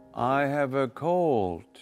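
slowed-down, synthetic-sounding computer voice. A woman in a video being watched speaks, in a computer-like voice. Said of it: "Why does it sound like a computer voice?".

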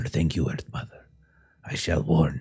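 whispered voice. A role-play character, after one last look for the wolf, gives thanks; whispering. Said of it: "he will just whisper".

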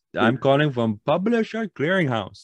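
put-on very high voice with heavy Jamaican accent. Retelling a phone call from a caller in Jamaica, in a heavy Jamaican accent. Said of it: "like very heavy Jamaican accent".

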